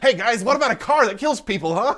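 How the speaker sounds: very high, very loud, goofy squeal. Imagining a young author pitching a story idea: goofy nerdy Stephen King impression. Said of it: "Just this goofy fucking guy with these big glasses".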